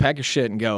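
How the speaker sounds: ordinary talk, nothing marked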